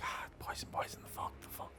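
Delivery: whispering. Narrating a scene, voicing a whisper that is heard: whispered. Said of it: "that kind of whisper of like".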